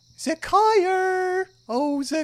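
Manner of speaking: lovely, tiny gnome lady voice, very high and sweet. Game narrator voices a tiny gnomish lady calling the player's name, lovely tiny gnome lady voice. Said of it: "the loveliest voice of a tiny gnomish lady".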